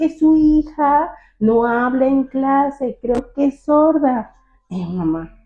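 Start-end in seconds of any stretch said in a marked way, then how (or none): 0.0-4.3 loud, slow, deliberate, pitched up. Retelling the teacher speaking to a deaf mother: imitating the teacher speaking loudly. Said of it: "le hablaba en voz alta".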